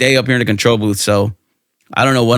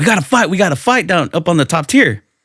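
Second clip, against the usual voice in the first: acted, high-pitched, loud shouted call; 7 semitones higher than usual. Retelling a three-on-one fight, calling to the cops for help: retelling own past yell. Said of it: "I just remembered yelling to the cops".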